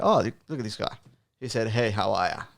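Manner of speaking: ordinary delivery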